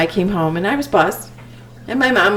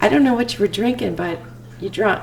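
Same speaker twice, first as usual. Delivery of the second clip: plain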